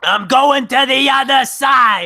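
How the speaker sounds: very slow, loud scream dragging every word. Joking about last words at the other side: screaming Gilbert Gottfried impression. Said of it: "I hope he screams his last words".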